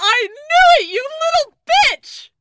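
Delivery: very high, very loud, shrill fake-angry yell. Yelling mad things at the game master: yelling in mock anger. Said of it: "I'm just yelling mad things at you!".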